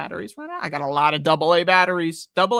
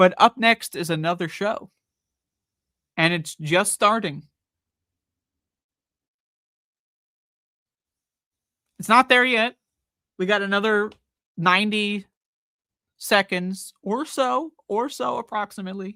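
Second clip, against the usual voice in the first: speaking really slowly at a deliberate pace; 3 semitones higher than usual. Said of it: "I have to speak really slowly".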